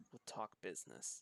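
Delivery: very quiet, barely audible hushed whisper. Narrator voicing a boy who whispers to Macon, whispering very quietly. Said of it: "the boy kind of whispers very quietly to you".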